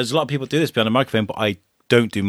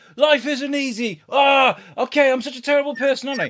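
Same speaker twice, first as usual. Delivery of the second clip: annoyed, argumentative tone, higher. Retelling snapping at the wife mid-argument before going live: imitating own annoyed arguing. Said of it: "me and the wife have had beef".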